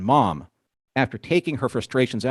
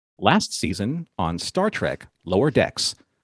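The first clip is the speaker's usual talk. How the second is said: dramatic, broadcast-style announcer voice; 3 semitones lower than usual. Opening an episode talk for listeners, speaker switches to announcer voice. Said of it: "I got to get my um my announcer voice on".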